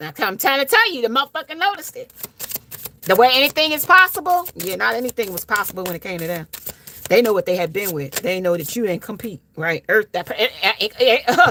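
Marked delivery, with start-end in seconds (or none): 9.9-11.5 stuttering, slower. Talking to listeners, the speaker stumbles over a word: stuttering. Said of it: "I'm stuttering".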